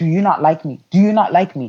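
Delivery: mock yelling, a man's yelling voice. Recounting a man's reaction to her silence, she imitates him yelling. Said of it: "He he he starts yelling he's like".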